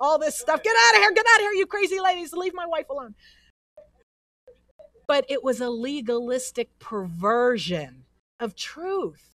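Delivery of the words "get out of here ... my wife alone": loud, high-pitched scream. Retelling her husband yelling at women who attacked her, imitating someone screaming. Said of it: "he starts screaming at them in Italian".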